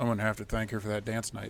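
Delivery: muttered under the breath. A player speaks as his character, muttered under his breath. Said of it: "under his breath".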